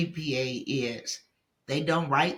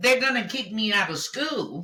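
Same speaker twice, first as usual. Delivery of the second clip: put-on, high, pitched-up yell in alarm; 7 semitones higher than usual. Retelling own reaction to failing one test: imitating own past yelling. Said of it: "Because I was yelling".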